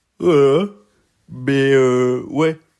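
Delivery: very loud talk, yawned through. Just woken up, explaining to viewers who does the drafts, yawning. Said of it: "je viens de me réveiller. Vous connaissez, hein, je fais mes vidéos au réveil, donc euh, je baille souvent".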